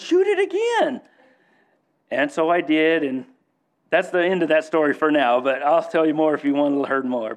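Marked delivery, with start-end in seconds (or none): 0.0-1.0 play-acted hysterical yell, very high, oddly calm. Retelling a hunt when the shot deer got up: retelling grandpa's hysterical yell. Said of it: "In my grandpa's calmest, hysterical voice, he yells".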